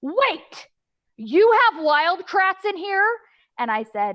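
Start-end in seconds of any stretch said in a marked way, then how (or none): 0.0-3.1 very loud, very high, drawn-out exclaim. Retelling what a boy said when another kid pulled up the characters: very loud exclamation. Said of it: "he says very loudly".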